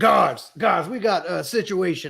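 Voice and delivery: booming, unnaturally loud shout. Using magic to boom, a character calls down the hall to the guards. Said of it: "make my voice boom three times as loud".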